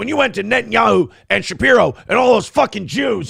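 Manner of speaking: high, raspy, unhinged, losing-it yelling. Speaker acts out a man's outburst at someone who left him: retelling someone losing it. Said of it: "he loses it one day".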